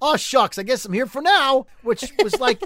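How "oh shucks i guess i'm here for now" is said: overly sweet, folksy, homespun pioneer-style delivery. Recapping a TV episode, retelling a character's reply in a Little House on the Prairie voice. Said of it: "he said it in like Little House on the Prairie kind of way".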